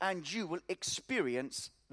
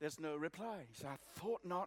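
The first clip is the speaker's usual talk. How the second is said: ordinary delivery, nothing marked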